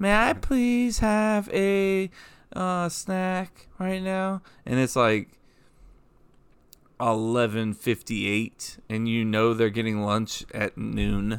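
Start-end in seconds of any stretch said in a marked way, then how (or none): 0.0-4.4 put-on sugary, pleading kid voice, high and slow. Imitating kids asking for a snack: imitating a sweet kid voice. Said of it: "they're gonna use the sweet vacay kid voice".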